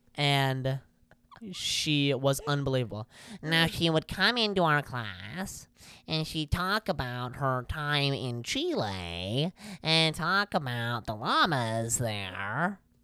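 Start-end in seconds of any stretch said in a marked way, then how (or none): 3.4-12.8 substitute teacher voice with "Chile" drawn out. Speaker recalls a favorite substitute teacher's talks in class, imitating Mrs. Fonches. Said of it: "isn't that a pretty good impression?".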